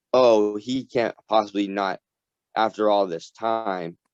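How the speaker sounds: ordinary delivery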